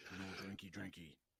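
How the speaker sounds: put-on soft baby talk, like a toddler. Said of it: "She's like".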